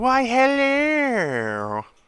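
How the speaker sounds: very high, loud, shrill, swooping, drawn-out hello. Greeting the stream in a Mrs. Doubtfire voice. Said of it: "doing my Missus Doubtfire voice".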